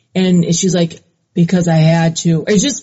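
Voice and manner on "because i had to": put-on numb, blank voice, lower. Retelling an answer given in a police interview: imitating a low, blank voice. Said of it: "her voice gets real low when she answers".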